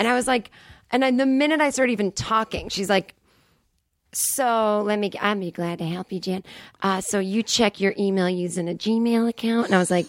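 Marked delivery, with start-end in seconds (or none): 4.1-9.7 slow, put-on Southern drawl, older woman's voice. Retelling a call with a Microsoft support woman: imitating a sixty-year-old Southern woman. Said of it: "she sounded like a sixty-year-old Southern woman".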